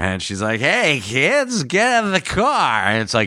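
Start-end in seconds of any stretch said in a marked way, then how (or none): 0.6-2.8 fake drunk voice, higher. Retelling a scene from an educational video: imitating a drunk mother. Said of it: "Mom's drunk".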